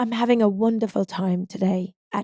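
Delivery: tried-out, put-on British accent. Taking a dare at a sleepover to talk in a British accent. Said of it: "Talk in a British accent".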